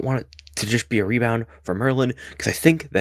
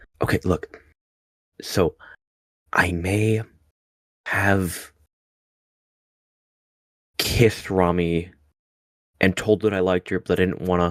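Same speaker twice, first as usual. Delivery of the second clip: in-character whisper, lower; 5 semitones lower than usual. Voicing Gale, leaning in close to whisper in someone's ear: whispering in character. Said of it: "like, whisper in his ear".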